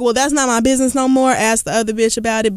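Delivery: ordinary talk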